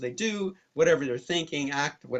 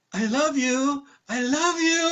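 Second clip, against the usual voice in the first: mock syrupy sweet tone, very high-pitched; 12 semitones higher, 6 dB louder than usual. Retelling what a man said as the speaker walked by him, imitating a really sweet voice. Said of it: "really, really sweet voice".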